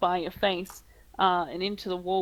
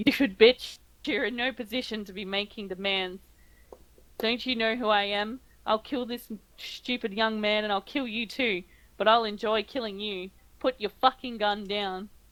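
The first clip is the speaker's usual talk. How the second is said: contemptuous sneer, laughing through it; 2 semitones higher than usual. Narrating to a player, voice a man answering their drawn-gun demand, sneering with a laugh. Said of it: "He sneers at you and gives a bit of a laugh".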